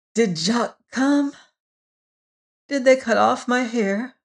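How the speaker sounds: weak. A woman recovering from a fever questions her nurse in a weak voice. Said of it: "asked in a weak but sane voice".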